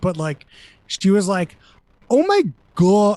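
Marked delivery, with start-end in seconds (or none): 2.1-3.2 loud, punchy, emphatic delivery with big inflection. Retelling how a woman on the show said a line: imitating Nadine's inflection. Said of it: "lines with some good inflections".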